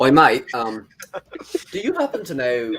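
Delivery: loud, swooping, amateur put-on British accent. Trying out an accent in a joking exchange: attempted british accent. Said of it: "I can't do the accent".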